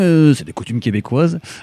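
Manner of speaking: Belgian accent, voice shifted away from own. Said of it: "je le dis avec l'accent belge".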